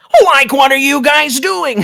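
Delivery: put-on stoner cartoon voice. Voicing a cartoon character who walks up to the group: Shaggy voice. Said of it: "And it's Shaggy, Shaggy walks up".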